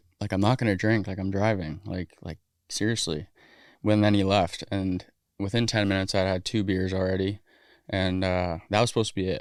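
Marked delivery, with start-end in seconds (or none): none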